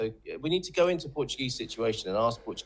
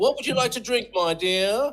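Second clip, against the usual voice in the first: put-on very high, pitched-way-up old movie-star voice; 11 semitones higher than usual. Doing voices mid-conversation, drifting into a Cary Grant impression. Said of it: "It's going into Cary Grant now".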